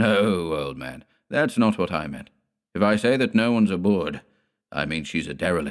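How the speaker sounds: usual speaking voice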